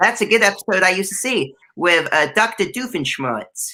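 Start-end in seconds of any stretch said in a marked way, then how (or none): 2.3-3.7 vampire-style Transylvanian accent. Naming a character from a Phineas and Ferb episode, Doctor Doofenshmirtz-style accent. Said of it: "I made it a bit more Doctor Doofenshmirtz, and I made it more of a Hotel Transylvania vibe".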